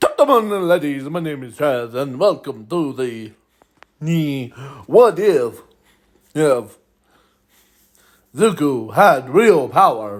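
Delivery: spooky classic vampire host voice. Opening a video as the host, welcoming viewers in a vampire voice. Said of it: "I'm talking like a vampire".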